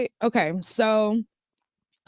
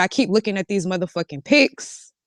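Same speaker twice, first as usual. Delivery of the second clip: usual speaking voice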